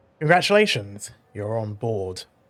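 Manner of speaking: dry, mildly sarcastic, swooping pitch. Voicing a character welcoming a player aboard: dry, somewhat sarcastic tone. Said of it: "in a rather dry, somewhat sarcastic tone".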